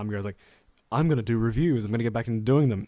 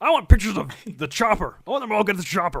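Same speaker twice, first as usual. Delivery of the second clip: very high, squeaky frog puppet voice; 9 semitones higher than usual. Trying for a different impression, the speaker ends up doing a Kermit the Frog voice. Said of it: "I just ended up doing Kermit".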